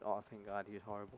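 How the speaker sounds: ordinary delivery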